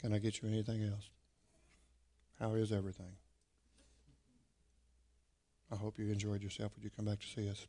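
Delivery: hushed, flat, uninterested drone, very quiet and low. Retelling a meal out, the speaker quotes the waitress, imitating a monotone waitress. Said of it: "she was really quite monotone".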